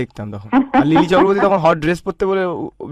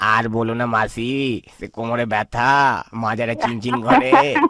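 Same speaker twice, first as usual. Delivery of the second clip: mock grumbling maid voice, lower pitch; 6 semitones lower than usual. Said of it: "ওই মাসি বলে আমাদের ওখানে একজন ভদ্রমহিলা".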